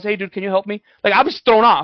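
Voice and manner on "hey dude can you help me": put-on werewolf voice, pleading. Imagining a werewolf asking for help: pretend werewolf asking for help. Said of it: "if I see a werewolf and he goes".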